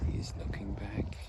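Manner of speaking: soft, low whisper. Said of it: "Why am I whispering?".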